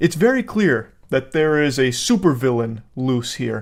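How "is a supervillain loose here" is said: normal talking voice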